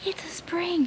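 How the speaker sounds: high, hushed, excited whisper. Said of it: "I don't know why I'm whispering".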